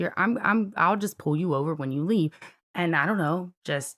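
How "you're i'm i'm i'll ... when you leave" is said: mock menacing tone, stammering and tripping over words. Retelling what the officer said to threaten: imitating a threatening officer. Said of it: "He's threatening me".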